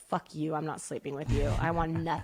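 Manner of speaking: put-on furious dog voice. Retelling how the dog reacted to being put on a diet, voicing the dog, mock-furious. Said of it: "Like literally so mad".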